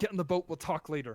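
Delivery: frantic, panicked, hurried delivery. Voicing the captain, frantically looking around, urging everyone into the boat: frantic. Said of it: "the captain frantically looking around".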